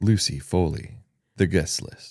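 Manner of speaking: low, deep reading voice.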